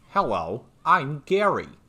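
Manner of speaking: high, loud, swooping put-on voice. Imitating a game character's greeting after remarking on his voice: imitating Gary's voice. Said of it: "This guy sounds like a voice that someone would do".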